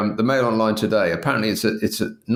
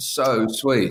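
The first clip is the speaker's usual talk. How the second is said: ordinary talk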